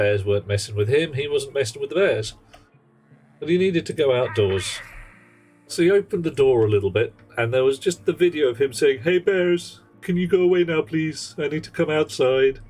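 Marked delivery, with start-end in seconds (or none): 9.0-12.5 put-on polite Canadian accent, higher. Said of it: "one of the most Canadian things ever".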